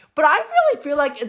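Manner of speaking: breaking voice that cracks upward in mid-phrase. A podcaster talking to listeners, with a sudden voice crack. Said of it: "what was that voice crack?".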